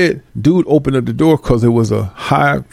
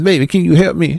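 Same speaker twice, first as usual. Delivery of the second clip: put-on trembling, shaky old voice; 3 semitones higher than usual. Mocking people who pose as frail to get help, the speaker imitates a trembling old voice. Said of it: "your voice trembling, you talking like this".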